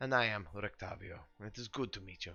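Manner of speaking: put-on speaking with a German accent. Voicing a character introducing himself to Gallus, in a German accent. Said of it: "hard to do a German accent".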